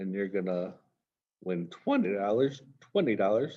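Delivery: voice breaking and cracking mid-phrase. Speaker explaining expected value while listing winnings, voice cracking. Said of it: "My voice just cracked".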